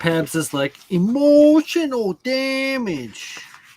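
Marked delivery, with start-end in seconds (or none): 0.9-3.4 very high, loud meme voice, "damage" stretched out. Quoting a friend, impersonating the guy who says the line. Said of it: "a pretty good impersonation of that guy that says that".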